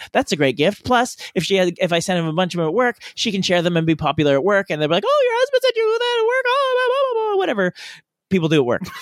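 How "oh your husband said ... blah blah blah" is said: very high-pitched chattering voice. Telling how coworkers react to a spouse's gift, imitating high-pitched coworker voice. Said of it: "they all talk in high-pitched voices".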